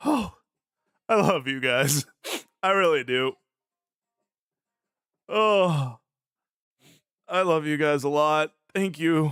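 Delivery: choked-up, voice catching, close to tears. Thanking the group, close to tears. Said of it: "I don't wanna cry".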